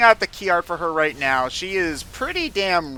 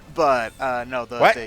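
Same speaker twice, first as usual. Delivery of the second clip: ordinary talk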